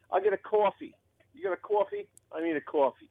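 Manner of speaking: put-on New York accent. Asked for a New York accent, speaker orders coffee: New York accent. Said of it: "That's not bad".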